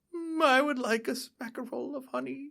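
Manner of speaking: very high, shrill, slow, drawn-out voice. Imitating an actor who plays the cartoon bear: Winnie the Pooh voice. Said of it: "his Winnie the Pooh voice".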